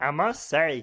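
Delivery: slowed-down delivery with heavy southern drawl. Showing how to do Family Guy's Cleveland Brown, a Cleveland Brown impression. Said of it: "slow it down and get that southern drawl in there, and then you have Cleveland".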